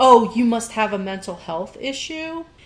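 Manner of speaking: ordinary talk, nothing marked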